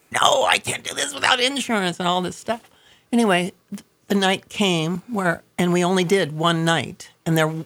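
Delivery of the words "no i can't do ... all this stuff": play-acted, high, mild, half-strength shout. Recalling screaming at the insurance man days before the event; retelling a scream. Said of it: "I'm screaming at him".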